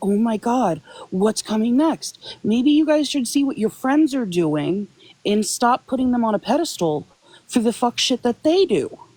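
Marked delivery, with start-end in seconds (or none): 0.0-2.4 put-on panicked voice, slower. Speaker addressing people who panic, acting out their reaction: imitating panicked people. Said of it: "So if you're panicking".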